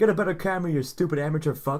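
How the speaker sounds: put-on casual, offhand, angry, tossed-off yell. Recounting a scene where a guy yells at another character; acting out offhand yelling. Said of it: "the guy's just like offhandedly yelling at him".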